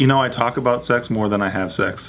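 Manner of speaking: ordinary delivery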